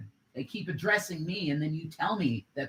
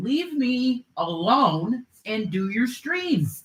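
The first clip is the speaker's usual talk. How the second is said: furious, high-pitched, very loud angry shouting; 8 semitones higher, 9 dB louder than usual. Arguing with the other speaker during a stream: angry yelling. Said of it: "and stop yelling".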